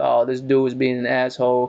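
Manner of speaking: normal talking voice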